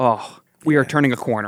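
plain

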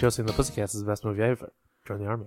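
rushed, crammed-together, rattled off as fast as possible. Speaker tries to slip a line into the show, said as fast as possible. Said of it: "I tried to say it as fast as I could".

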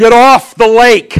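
very loud, very slow, drawn-out bullhorn yell. Retelling how police on the shore yelled across the lake: retelling a bullhorn yell. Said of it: "they're yelling across the lake with this bullhorn scream".

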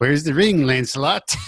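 put-on scolding old lady voice. Describing a movie's opening, quoting the old lady giving someone hell, old lady voice impression. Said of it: "That's a pretty good voice of her too".

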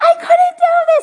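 very high, loud, laughing-crying shout of joy. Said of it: "And he's like".

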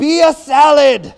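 high, slow, loud mock shouting.

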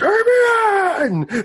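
shouting as loud as possible. Calling out for damien in character: shouting as loud as possible. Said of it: "as loud as he possibly can".

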